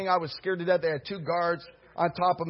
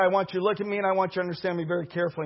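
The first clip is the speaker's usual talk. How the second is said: ordinary talk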